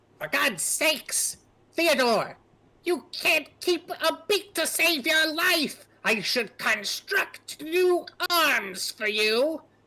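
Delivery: piercing high-pitched voice. Telling a story, voicing Grow speaking to Theodore in a high-pitched shrill voice. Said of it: "you hear inside a kind of high pitched, shrill voice".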